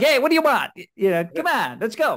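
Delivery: put-on New York accent. Contrasting how people talk in Arkansas and in New York: New York accent. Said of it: "but in New York, it's like".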